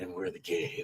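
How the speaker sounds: very deep, very hushed, soft action-hero voice after pause. Quoting a movie line with a pause first: Adrien Brody deep action voice. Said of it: "Adrian Brody doing his best deep voice guy".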